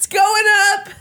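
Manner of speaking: high-pitched, laughing conveyor belt voice. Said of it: "that was my conveyor belt impression".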